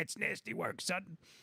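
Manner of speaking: rough, raspy, gravelly voice. Quoting what that boomer says, imitating a raspy pot-smoker voice. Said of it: "he's got the raspy pot smoking voice".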